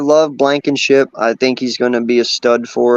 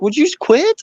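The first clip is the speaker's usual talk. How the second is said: mock yelling, much higher in pitch; 14 semitones higher than usual. Retelling what she said to him about taking her players, imitating someone yelling. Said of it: "She yelled at me".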